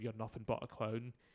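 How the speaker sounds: ordinary talk, nothing marked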